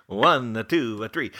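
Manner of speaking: absurd, over-the-top Italian accent.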